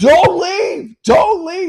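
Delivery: frantic, panicked, very high, loud voice. Retelling a payphone call from an uncle, imitating Uncle Tom's panic. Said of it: "He's like in a panic".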